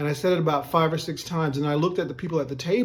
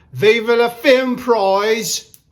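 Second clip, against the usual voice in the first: very loud, slow, drawn-out Cockney accent; 7 semitones higher, 10 dB louder than usual. Asked on the spot to do an accent, trying a Cockney accent. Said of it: "What about a Cockney? Let's do it".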